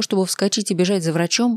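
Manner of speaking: ordinary talk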